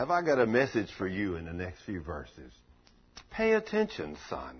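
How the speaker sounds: deep, very low, soft, gentle, loving voice. Speaker retells the first time God spoke to him, gentle voice of God. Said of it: "that gentle voice".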